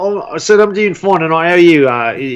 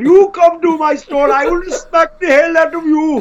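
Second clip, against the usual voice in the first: very high-pitched, put-on Pakistani accent; 12 semitones higher than usual. Showing off an accent by playing someone with a store, in a put-on Pakistani accent. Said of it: "I can do Pakistani very well".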